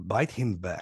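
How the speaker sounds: put-on broken English with a slight Russian accent. Retelling the Amazon guide's answer about the monkey, in Yuri's broken English. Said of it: "in his broken English".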